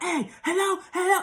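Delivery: play-acted shrill, very high, loud screaming. Retelling how a friend on the phone heard the struggle: imitating a friend screaming. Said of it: "I could hear my homeboy screaming".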